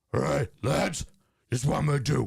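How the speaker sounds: rough, creaky, raspy manager voice. Performing a sketch of a manager's locker room talk: Sean Dyche impression. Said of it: "my interpretation of Sean Dyche in the locker room".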